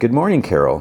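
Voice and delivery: acted cheery, upbeat, bright, very chipper tone. Retelling a scene where Zosia greets Carol by phone, imitating Zosia's chipper voice. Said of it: "Zosia sounds like very chipper".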